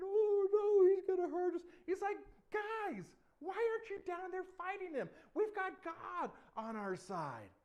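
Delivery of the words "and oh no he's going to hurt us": very loud, high, frightened scared cry. Retelling the David story, voicing the hiding soldiers: mock-scared soldiers. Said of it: "hiding and shaking".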